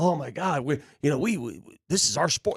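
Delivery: dreamy, deluded, faraway delivery. Mocking what fans say about the team: imitating a Knicks fan. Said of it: "Knicks fans live in".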